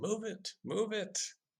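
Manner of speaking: shrill, very high, drawn-out shouting. Imagining him stepping out of the woods, imitating someone yelling. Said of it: "Is he just yelling".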